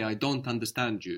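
ordinary delivery

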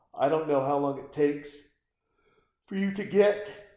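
words stretched by a very loud yawn. Speaker walking listeners through a lottery win, yawning mid-sentence. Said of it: "pardon me with the yawn".

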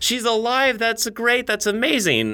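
bright, put-on cheeriness.

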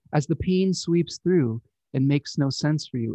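ordinary talk, nothing marked

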